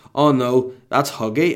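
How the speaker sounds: ordinary talk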